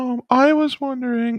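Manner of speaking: put-on very high, slow old Victorian queen voice.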